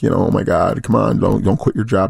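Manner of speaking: put-on crying voice. Retelling the speaker's mom's phone call, imitating mom crying.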